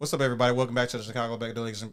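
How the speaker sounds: rapid-fire radio DJ voice, rattled off quickly. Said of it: "I gotta stop talking so fast".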